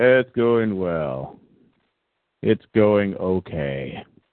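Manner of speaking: put-on flat, unenthused delivery. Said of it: "you don't sound too enthused there".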